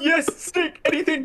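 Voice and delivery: very high-pitched, puppet-style voice. Improvising a scene as the character on the right: Kermit the Frog voice. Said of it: "my Kermit impression".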